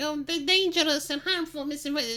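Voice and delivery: meek, timid, feeble voice, high, lacking gravitas. Mocking a modern speaker in a little bow tie: imitating a timid soy boy. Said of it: "a soy boy with, with, like, a little".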